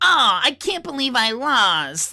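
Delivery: put-on high girlish voice, lost drawn out. Showing the voice once done for Final Fantasy eight: Selphie voice. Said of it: "I might do like the selfie voice".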